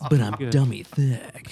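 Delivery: put-on gruff soldier voice. Doing a Solid Snake impression for the others: Solid Snake voice. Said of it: "I used to do a lot of Solid Snake".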